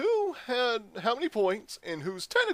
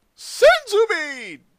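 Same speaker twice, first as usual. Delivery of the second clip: shrill, blaring, very high, very loud dubbed character voice; 9 semitones higher, 11 dB louder than usual. Shouting a catchphrase: Team Four Star dub voice. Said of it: "why do you sound different?".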